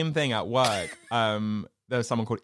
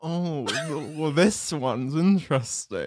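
words moaned and groaned out. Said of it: "moaning and groaning".

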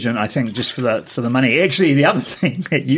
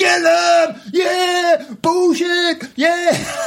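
mock angry screaming, much higher. Retelling how angry people screamed at the cinema, imitating angry screaming. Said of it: "They're screaming it".

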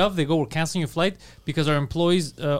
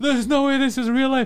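mock crying wail, very high and loud; 10 semitones higher than usual. Retelling a night at a strip club with Erica, retelling loud crying. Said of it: "And I'm crying loud".

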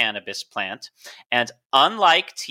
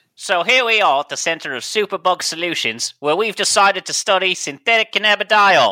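put-on Australian accent, pitched up; 7 semitones higher, 4 dB louder than usual. Joking about a research center's name: put-on Australian accent. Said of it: "Was that your Australian accent?".

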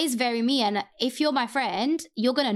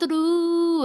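heavy stress placed on the word "through"; 7 semitones higher, 4 dB louder than usual. Quoting how she says the last line, imitating her stress on through. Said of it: "she says through like that".

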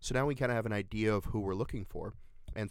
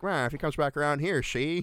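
loud, high put-on 1920s Boston gangster accent; 6 semitones higher, 6 dB louder than usual. Retelling what she told the cops: imitating a 1920s boston gangster accent. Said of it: "now they're from Boston in the twenties".

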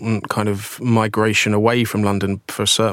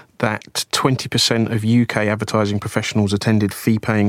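ordinary delivery

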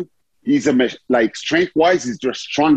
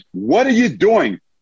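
high, angry shout; 7 semitones higher than usual. Retelling yelling at a player who grabbed his jersey, retelling a yell. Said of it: "I yelled at him".

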